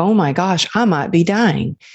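plain

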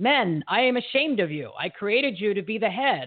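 rebuking voice of the almighty. Telling a story, the speaker voices God addressing the men: God's voice. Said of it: "That's my version of God's voice".

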